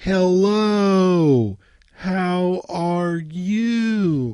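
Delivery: slow and loud. Showing how people talk to someone not fluent in the language, slow loud speech. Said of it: "most people will speak slower and louder".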